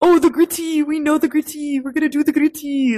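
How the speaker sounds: put-on heavy French accent, high, shrill and loud. Retelling what local kids said to the American girls: thick French accent. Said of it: "they had like really thick French accents".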